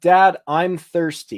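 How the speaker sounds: acted commanding tone. Retelling how a daughter asks for drinks: imitating a declarative, commanding tone. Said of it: "in a very declarative, uh, al-, almost commanding tone".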